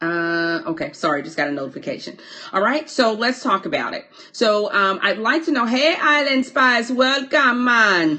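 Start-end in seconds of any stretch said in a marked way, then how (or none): 5.6-8.2 high, slow put-on Jamaican accent. Welcoming island spies as they come in, in a fake jamaican accent. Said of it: "I have to give my fake um, Jamaican accent".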